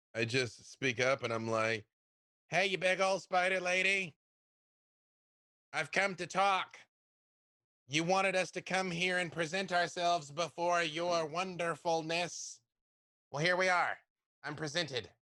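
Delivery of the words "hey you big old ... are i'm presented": loud, resonant, magnified voice. A player's character speaks up to the big spider lady in a booming magically amplified voice. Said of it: "cast thaumaturgy to make my voice boom".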